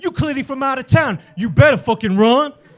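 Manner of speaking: ordinary delivery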